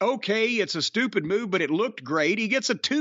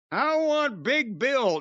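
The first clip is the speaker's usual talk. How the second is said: fake nasal whining voice; 4 semitones higher than usual. Retelling Jungle Boy getting on the microphone, Jungle Boy's nasal whine. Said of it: "through his nose he whined out".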